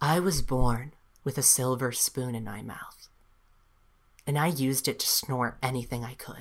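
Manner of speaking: buttery, smooth, honeyed romantic voice. Retelling how he answered the question, imitating his buttery voice. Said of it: "in his buttery, my love and Amelia voice".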